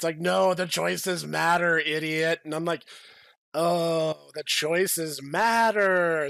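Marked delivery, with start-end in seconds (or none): 0.2-2.4 mock exasperated, frustrated scream. Retelling a frustrated game dev screaming at the speaker, imitating a frustrated scream. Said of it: "frustrated game dev screaming at me".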